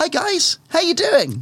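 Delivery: lively, bright, upbeat voice, pitched very high. Suggesting how the character Gary should sound greeting people: bright upbeat greeting.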